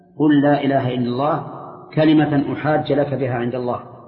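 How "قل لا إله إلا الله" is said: usual speaking voice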